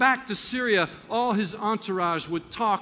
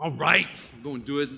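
put-on grumble, lower pitch; 7 semitones lower than usual. Acting out Naaman, told to do a little thing, mock-grumbling under his breath. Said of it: "kind of grumbling under his breath".

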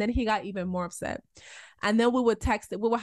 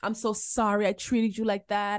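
mock tearful, crying voice. Retelling a crying apology made in the yard: imitating a crying apology. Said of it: "he's apologizing and he's crying".

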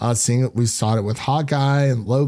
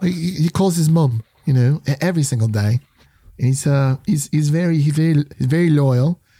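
higher-pitched mock Cockney accent. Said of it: "that's more of a Cockney accent".

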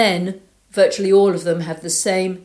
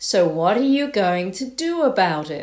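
put-on laid-back, drawling Australian accent. Retelling how a riding coach answered her rider's angst, in an australian drawl. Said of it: "in this wonderful Australian drawl go".

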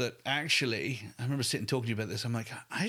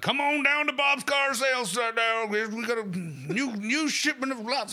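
put-on American accent, much higher, slower; 12 semitones higher, 6 dB louder than usual. Mocking what some people fear from company videos, American car-ad impression. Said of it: "that was my American impression".

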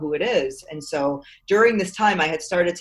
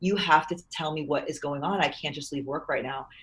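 quieter, pleading tone; 6 dB quieter than usual. Retelling a call with a lawyer, reenacting own past pleading. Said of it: "and I was pleading".

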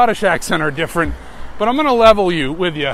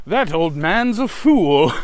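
put-on grumbly British accent, lower; 3 semitones lower than usual. Quoting a scripted Chewbacca line, Chewbacca mock-grumbling in a British accent. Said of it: "grumbling very Britishly".

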